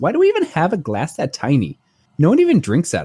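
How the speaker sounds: put-on small, curious, sing-song little-kid voice. Parent retelling the daughter's question while unpacking, in her little Stella voice. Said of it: "In her little Stella voice".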